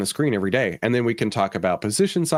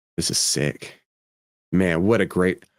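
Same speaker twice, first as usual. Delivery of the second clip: heavily sarcastic tone, lower pitch; 4 semitones lower than usual. Describing a costly trade, with heavy sarcasm. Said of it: "I don't know if my sarcasm's coming through".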